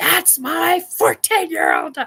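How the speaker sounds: very loud, booming, swooping bellow. Retelling what he told the dudes about his fourteen-year-old, with a loud booming shout. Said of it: "largest, loudest, booming voice he ever had".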